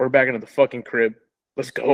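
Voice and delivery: ordinary talk, nothing marked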